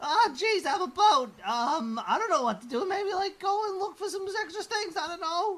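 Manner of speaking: very high-pitched, shrill, loud put-on talking-boat voice. Trying out another voice for the boat: new talking boat voice. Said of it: "I'm trying out new boat voices".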